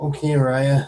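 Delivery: frightened, sick-sounding voice. Game master voicing a character who takes an apple from a player: scared, sick voice. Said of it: "says in a very um scared and very sick voice".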